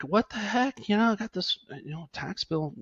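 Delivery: put-on mildly angry griping, pitched high. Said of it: "you get kinda angry".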